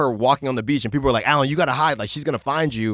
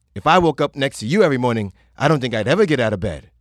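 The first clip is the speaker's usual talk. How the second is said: put-on rushed, butchered British or Australian accent. Retelling what a woman said to the speaker, in a butchered Australian or British accent. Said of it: "I'm going to butcher this accent".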